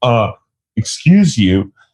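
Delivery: mock offended, put-out, affronted tone. Retelling a group turning around on someone: imitating offended people. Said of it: "they all stop and freeze and they turn around like".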